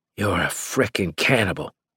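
ordinary delivery

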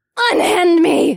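very high, loud, shrill scream. A captive woman, thrashing and kicking, screams at her captor. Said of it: "The captive woman screamed".

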